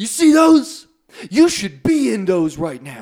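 loud, scolding yell. Retelling being shown handcuffs in the office: imitating someone yelling. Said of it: "yelling at me".

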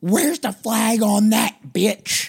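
very high, shrill, high-pitched shriek. Telling about a man in a Browns bar, the speaker imitates his scream. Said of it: "He screams".

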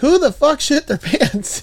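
mock shrill, high, sudden old woman holler. Retelling a family road trip through texas, grandma's outburst: imitating grandma yelling. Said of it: "my grandma like starts yelling".

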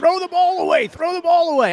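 very high, screamed yelling. Retelling a football play from the past: imitating own past screaming. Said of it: "And I'm screaming".

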